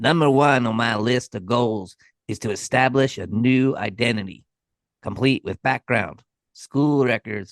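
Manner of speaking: put-on nasally, nerdy voice. Quoting a man describing his life goals, in a nasally, nerdy voice impression. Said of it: "He's got like this really nasally, nerdy voice".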